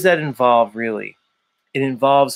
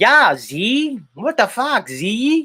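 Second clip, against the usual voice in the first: put-on heavy Chicago accent, high, slow, drawn out; 9 semitones higher than usual. Pretending Special K is present and doing her voice: imitating Special K's Chicago accent. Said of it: "I'll just do the Special K".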